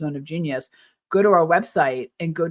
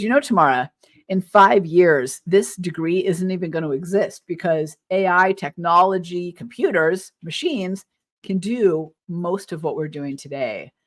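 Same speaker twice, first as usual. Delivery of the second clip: usual speaking voice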